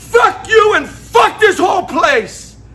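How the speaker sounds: high, loud, slow, tearful crying shout.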